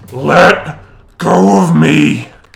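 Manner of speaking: growling voice. Game master voices a woman the player grabs hold of: growling. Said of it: "as she starts growling".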